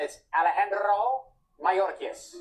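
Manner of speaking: careful, fluent Spanish pronunciation of a name. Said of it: "But on C N N".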